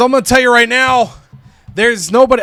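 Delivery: loud, high, belted-out wrestling ring promo voice. Voicing a wrestler's promo line, slipping into a Bret Hart voice. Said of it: "it sounded like Bret Hart there".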